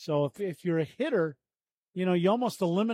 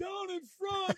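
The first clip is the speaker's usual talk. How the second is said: high-pitched yell. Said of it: "so we don't have to yell".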